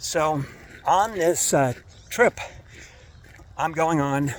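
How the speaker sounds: winded, out of breath, running short on air. Speaker telling listeners about an upcoming trip, out of breath. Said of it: "I ran out of breath for some weird reason".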